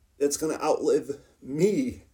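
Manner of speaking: choked up, voice catching and breaking. On a podcast in the office, speaking of the building outlasting the speaker, choked up. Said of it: "sorry to get choked up".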